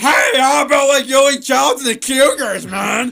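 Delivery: blaring, really loud voice. Describing the sports guy entering on the show: Adam Lurcher's really loud voice. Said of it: "in this really loud voice".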